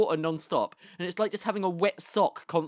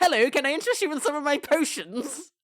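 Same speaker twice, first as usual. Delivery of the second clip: high, sweet-talking, slightly off-putting witch voice; 8 semitones higher, 4 dB louder than usual. Acting out a witch greeting a passing testificate: friendly witch voice. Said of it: "She's a friendly witch".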